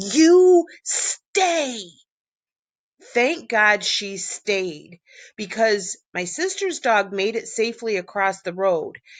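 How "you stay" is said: stern, high-pitched scream. Retelling screaming at a sister's dog by the road, acting out a stern scream. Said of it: "in a screaming, stern voice".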